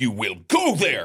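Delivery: big, loud, booming yelling voice. Retelling a man's advice on which school to attend, retelling a big yelling voice. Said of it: "big voice".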